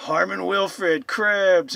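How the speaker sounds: first word stretched slow, then Cribs punched loud. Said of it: "the way Jason said Cribs".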